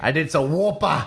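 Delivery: put-on Australian accent. Voicing Steven Moffat's goodbye on the show, in an Australian-accented Steven Moffat voice. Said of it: "all of a sudden is, is Australian".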